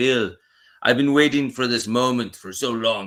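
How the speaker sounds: loud, put-on Russian accent. Speaker retells a friend opening a bottle for him, imitating a russian accent. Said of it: "He's like Russian".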